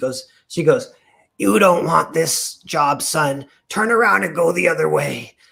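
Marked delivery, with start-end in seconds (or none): 1.4-5.3 put-on loud, scratchy, grizzled old lady smoker's rasp. Retelling walking in for a job and an old woman's words to him: scratchy old lady voice. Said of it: "voice is like so scratchy".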